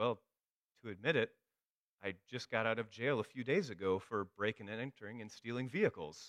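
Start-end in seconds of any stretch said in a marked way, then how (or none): none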